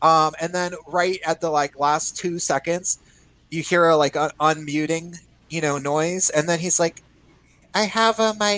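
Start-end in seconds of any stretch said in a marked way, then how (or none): 7.7-8.6 put-on high little kid voice. Retelling a player who unmuted at the last second, in a little kid voice. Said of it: "Like in a little kid voice".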